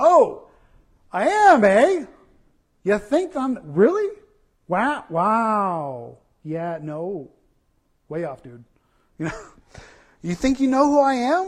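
put-on sarcastic tone. Explaining a parable, the speaker acts out the nobleman's reply with put-on sarcasm. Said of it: "kind of sarcastic".

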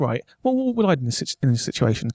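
ordinary talk, nothing marked

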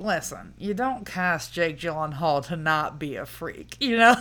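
ordinary talk

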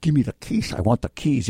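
put-on drunk voice. Explaining to Kent, act out a drunk daughter or friend: imitating a drunk voice. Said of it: "in some drunk voice".

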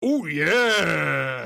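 loud bursting cry with yeah stretched long. Retelling the Kool-Aid Man bursting in: Kool-Aid Man voice. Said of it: "the Kool-Aid Man bursts in and goes".

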